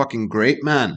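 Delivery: Scottish-sounding voice. Quoting a man who does accents, in a Scottish accent. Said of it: "does sound Scottish".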